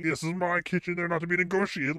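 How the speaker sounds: mocking, bossy, petty little dictator voice. Mocking a coworker who laid down kitchen rules: mocking imitation of a bossy rule-maker. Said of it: "young Adolf got in the kitchen here and started laying down the rules".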